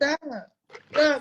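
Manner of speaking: high, put-on feminine voice. Imitating someone saying stop, stop, in a put-on feminine voice. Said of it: "they got that voice like stop, stop. ... they got that feminine voice".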